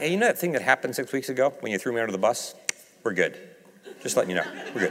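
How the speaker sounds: hushed, quiet aside. Imagining a private talk after breakfast on the shore, retelling a quiet aside. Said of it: "he says to me quietly".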